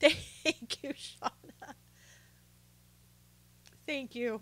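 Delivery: whispered and breathy, voice breaking with tears. Thanking someone who shared a story, crying. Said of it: "Sorry, guys, I cry".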